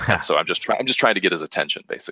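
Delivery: ordinary talk, nothing marked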